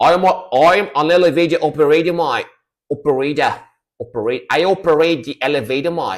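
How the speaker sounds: put-on Australian accent. Riffing on names, the speaker does an Australian accent. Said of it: "when I do the Australian accent".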